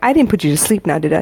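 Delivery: ordinary delivery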